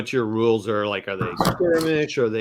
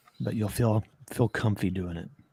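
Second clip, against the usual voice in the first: put-on public radio voice, quieter; 3 semitones lower, 7 dB quieter than usual. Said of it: "talking like this because everybody on N P R talks like this".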